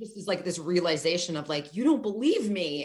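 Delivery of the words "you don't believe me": mock tearful crying with a cracking, breaking voice. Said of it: "she's, like, crying".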